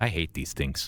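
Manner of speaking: whispered goblin voice. Game narrator voicing the goblin companion whispering to the player: goblin whispering. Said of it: "Then he whispers to you".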